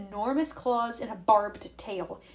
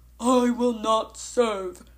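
hurt, wounded voice, raised and slow; 6 dB louder than usual. Tyson, mimicking voices as if in a trance, speaks in a deep, wounded voice. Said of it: "Tyson said in a deep, wounded voice".

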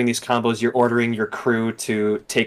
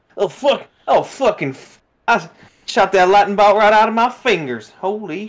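higher-pitched fake Southern accent; 8 semitones higher, 3 dB louder than usual. Complaining that a show's character got a voice that doesn't fit: put-on Southern accent. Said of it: "but why is she Southern?".

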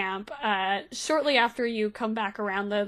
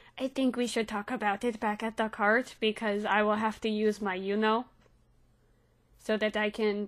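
voice dropped low and hushed; 5 dB quieter than usual. Game master voices a woman who looks around before answering the party, in a lowered voice. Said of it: "she lowers her voice and goes".

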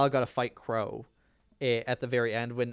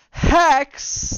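put-on, shrill, very high, very loud, disappointed shout; 12 dB louder than usual. Retelling a fight in the ring, the speaker imitates Sal's sad, angry cry. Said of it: "Like this really sad, angry, and disappointed".

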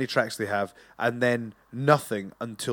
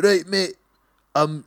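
put-on Scottish Glasgow accent, pitched up; 6 semitones higher, 3 dB louder than usual. Imagining a London billionaire recreating Batman, speaker does a Scottish Batman accent. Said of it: "this is the Scottish version of".

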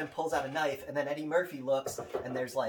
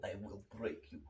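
very low, quiet, murmured Swedish accent; 7 semitones lower, 12 dB quieter than usual. Asked what Dolph Lundgren sounds like, answering with a Dolph Lundgren Swedish accent.

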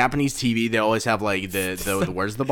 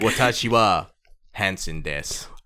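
put-on broken Japanese; 6 semitones lower, 4 dB quieter than usual. Imagining the host on a Japanese version of the show: Chris Hansen speaking bad Japanese. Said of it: "He speaks Japanese badly".

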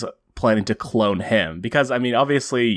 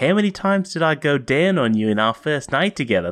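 higher-pitched, put-on Australian accent; 5 semitones higher than usual. Retelling a comic exchange, speaker voices Rose's line in a put-on Australian accent. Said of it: "i'm going to do my accent here".

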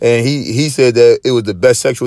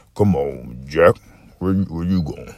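put-on deep voice, much lower pitch; 7 semitones lower, 7 dB quieter than usual. Retelling how his uncle called everybody Jack, in Uncle Sam's very deep voice. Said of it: "his voice was so deep".

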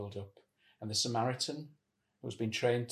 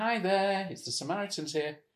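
loud, high, salesy cold-call voice; 8 semitones higher, 5 dB louder than usual. Showing how a call will not sound: sales call voice. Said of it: "It won't be like a sales call".

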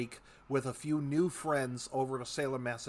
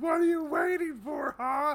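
put-on scream, much higher, louder; 13 semitones higher, 6 dB louder than usual. Telling a joke story, acting out a patient in her OBGYN's office, retelling a scream. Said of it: "she's screaming".

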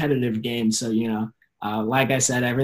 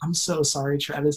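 mock-apologetic tone, higher; 3 semitones higher than usual. Retelling the coach's words to him after his last quiz, in a mock-apologetic tone. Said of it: "she was just kind of like very apologetic".

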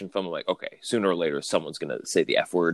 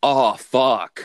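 put-on hammy sarcastic reading, high and loud; 6 semitones higher, 8 dB louder than usual. Mocking how PG-13 movies use the F word, imitating a sarcastic delivery. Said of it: "you said it like sarcastically".

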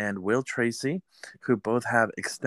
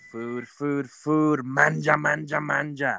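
mock Italian restaurateur voice, higher pitch; 3 semitones higher than usual. Opening the episode as an italian restaurant host: put-on italian restaurant host voice. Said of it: "Welcome to my Italian ristorante".

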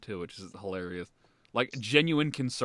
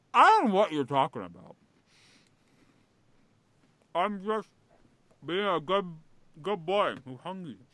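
talking with mouth full, higher pitch; 8 semitones higher than usual. Speaker answering someone teasing them for eating, talking with mouth full. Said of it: "talking with your mouth full".

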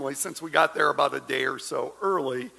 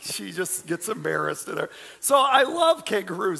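plain

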